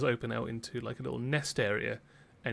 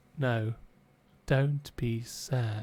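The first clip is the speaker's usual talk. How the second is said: put-on little girl voice, cracked and breaking. Talking with two others, the speaker voices a little girl: cracked little girl voice. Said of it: "like a cracked voice of a little girl going".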